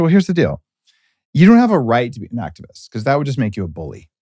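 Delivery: normal talking voice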